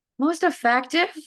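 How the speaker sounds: voice breaking mid-phrase, jumping high. Repeating a panel question back before answering: voice cracking. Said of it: "my voice cracked there".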